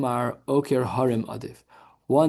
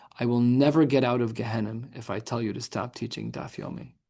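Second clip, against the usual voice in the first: put-on, mock-deadpan flat delivery; 3 dB quieter than usual. Quoting word for word what the rabbi said to him, retelling a deadpan line. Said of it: "he said it so deadpan".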